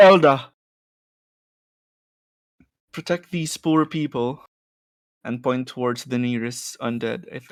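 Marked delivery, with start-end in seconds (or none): 0.0-4.4 booming, commanding call, very loud. A player commands their elk Elda, calling out. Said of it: "I call out".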